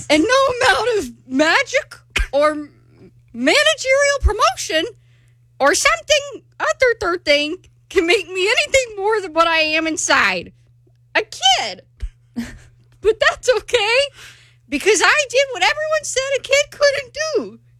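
high cartoon character voice. Auditioning by reading a SpongeBob monologue aloud: SpongeBob SquarePants voice. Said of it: "you sound like SpongeBob's grandma".

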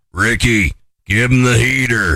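put-on gravelly voice. Quoting the manager from Major League telling Ricky: Lou's gravelly voice. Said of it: "his gravelly voice like this".

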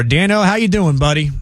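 easygoing Southern Louisiana drawl. Recalling how a friend always greeted him on the phone, the speaker mimics it in a Southern Louisiana accent. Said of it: "just in that Southern Louisiana accent".

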